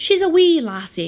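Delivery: best-effort Irish accent. Storyteller introducing a character named Nicole, in a put-on Irish accent. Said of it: "That was my best Irish accent".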